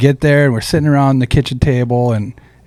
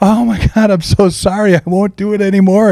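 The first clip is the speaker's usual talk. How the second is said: high, frantic, frightened, panicked pleading; 8 semitones higher than usual. Speaker retells his grandpa apologizing after being stabbed: mock-panicked pleading. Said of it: "And he's like panicking".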